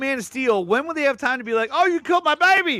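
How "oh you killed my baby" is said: fake Australian accent, higher. Acting out a father whose baby was killed: put-on Australian accent. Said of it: "Why does he speak with an Australian accent?".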